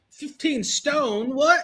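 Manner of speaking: high mock UK accent sounding disbelieving. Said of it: "like, a U K accent".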